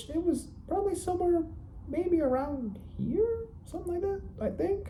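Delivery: very high-pitched talking voice, no boom. Showing how their voice used to sound, in a higher-pitched voice. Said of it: "my voice was like higher pitched".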